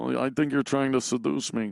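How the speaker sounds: nasal voice, every word through the nose. Continuing the actor impression with a famous movie line: Dustin Hoffman impression. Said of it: "You talk right through the nose".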